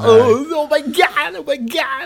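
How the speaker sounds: very high, very slow, stretched-out cries. Recalling how South Park shows John Travolta: South Park's John Travolta impression. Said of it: "whenever John Travolta's on it, he's like".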